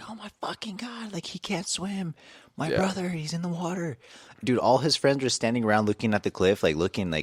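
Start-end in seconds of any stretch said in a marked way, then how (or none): 0.1-4.0 put-on very high, frantic screaming girl's voice. Retelling how a girl at a lake started screaming: imitating a girl screaming. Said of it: "this girl starts screaming out of fucking nowhere".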